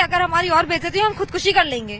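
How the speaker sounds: normal talking voice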